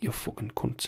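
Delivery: put-on very quiet, murmured speech in a Geordie accent. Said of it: "That's what she sounds like when she's out in the town".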